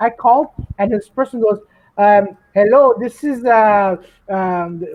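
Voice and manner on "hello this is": put-on Indian accent, louder. Retelling a scam phone call, imitating the caller: Indian accent. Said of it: "Why you're doing the Indian accent?".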